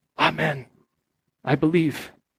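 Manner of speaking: faint, almost inaudible murmur. Retelling a character's reply in a story: imitating a barely audible voice. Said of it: "in this barely audible voice".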